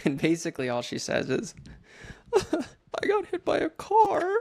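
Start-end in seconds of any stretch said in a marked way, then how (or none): 2.4-4.3 put-on tearful crying, pitched way up, slow, drawn out. Retelling a girlfriend's phone call after a car accident: imitating someone quietly crying. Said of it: "she's, like, low-key crying, like, sounds kinda weird".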